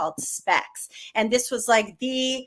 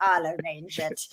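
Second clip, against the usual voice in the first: put-on German accent; 5 semitones lower, 5 dB quieter than usual. Retelling what an a and r guy said, imitating a german accent. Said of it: "with his German accent".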